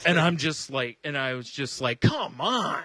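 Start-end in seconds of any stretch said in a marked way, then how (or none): 2.0-2.8 acted, exasperated, pitched-up annoyed outburst. Retelling getting mad while waiting behind a customer: imitating own annoyed outburst. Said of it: "and I say it out loud".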